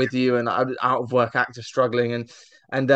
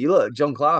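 put-on, proper-sounding Northern English accent. Retelling what a photographer said to him, imitating a Northern English accent. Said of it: "she's proper Northern".

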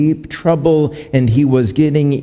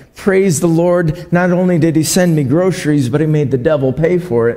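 normal talking voice

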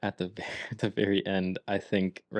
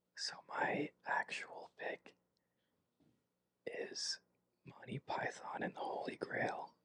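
very quiet, very slow, drawn-out hushed whisper. Revealing your real pick, which others won't see until the edit: whispering. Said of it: "Don't know why I'm whispering".

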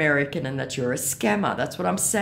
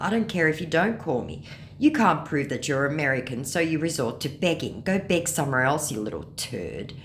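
ordinary delivery

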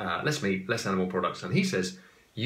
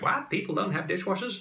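very high, bad fake American accent; 11 semitones higher than usual. Imagining americans reacting, in a terrible american accent. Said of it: "that was a terrible accent".

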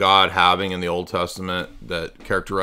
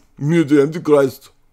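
fake, mock European accent; 8 semitones higher, 6 dB louder than usual. A caller trolling the host introduces himself; fake European accent. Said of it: "Do you like my European accent?".

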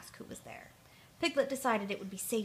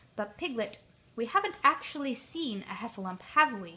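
ordinary delivery, nothing marked

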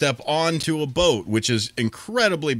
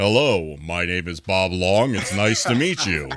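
put-on radio announcer voice; 5 semitones lower than usual. Imitating how he greeted people in the grocery store, Bob Long radio voice. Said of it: "he would always talk like this and use his radio voice".

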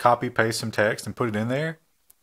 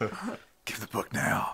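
hushed, breathy, very quiet whisper, barely voiced; 10 dB quieter than usual. Voicing the thing that shows up to take back library books: Batman voice. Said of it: "It's a Batman voice".

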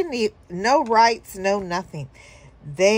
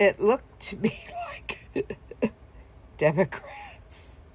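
breaking into laughter mid-sentence, laughing through. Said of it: "I'm laughing about it".

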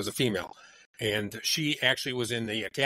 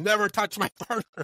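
mock yell, much higher and faster; 11 semitones higher, 4 dB louder than usual. Retelling how a partner yelled at a man, imitating someone yelling. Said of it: "She's yelling at him".

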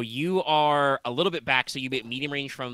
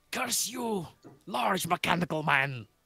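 put-on crazy, high, over-the-top French accent; 6 semitones higher than usual. Narrating a game, the speaker voices a character attacking the players: crazy French accent. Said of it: "Crazy French accent".

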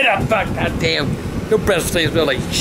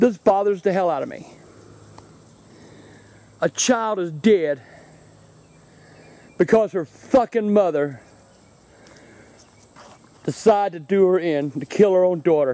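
openly troubled, upset, bothered tone. Speaking to viewers at the place where Caylee Anthony was found, upset. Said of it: "I'm a little upset right now".

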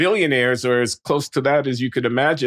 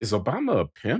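secretive, hushed half-whisper, very soft; 3 semitones lower, 6 dB quieter than usual. Retelling a question a student half-whispered: imitating a student half-whispering. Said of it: "comes to me and he whispers".

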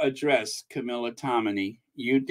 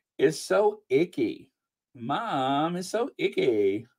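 put-on teenage girl voice, "mom" drawn out; 4 dB quieter than usual. Asking the audience's leave first, the speaker talks in a teenage girl voice. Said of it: "if you don't mind me talking like a teenage girl".

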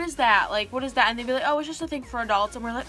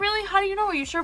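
mock-sarcastic, much higher; 8 semitones higher than usual. Acting out his reply after you said you weren't watching it: mimicking him kind of sarcastic. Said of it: "he was like kind of sarcastic about it".

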